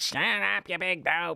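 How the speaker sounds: harsh grating talk-radio voice. Imitating a radio host heard while spinning the dial: Mark Levin impression. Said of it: "He's got the worst voice".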